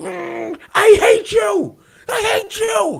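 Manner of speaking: acted-out furious little kid voice, very high, very slow. Retelling a game win, imitating an angry kid who lost. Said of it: "when kids get angry".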